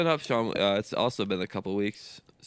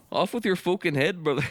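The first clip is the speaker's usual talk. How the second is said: very high voice sliding into a Canadian accent; 9 semitones higher than usual. Trading put-on accents with the others, the speaker's accent drifts into Canadian. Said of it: "I'm like morphing into Canadian".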